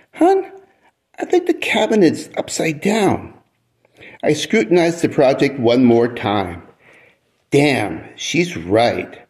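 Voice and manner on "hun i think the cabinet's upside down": very high, eager, sing-song, helpful lilt. After a long look at her husband's project, the wife speaks in a trying-to-be-helpful tone. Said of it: "in a I-want-to-be-helpful tone".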